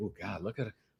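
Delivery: imitated whispering. Joking about walking around the community with her: imitating someone whispering. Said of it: "she's whispering to me".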